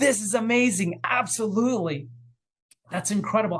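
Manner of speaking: excited and choked up. Speaker giving an example of encouraging someone, excited and choked up. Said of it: "I get so verklempt, so excited".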